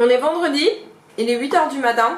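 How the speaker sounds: talking with mouth full. A coach on a friday morning at eight, talking with mouth full. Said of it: "j'ai la bouche pleine".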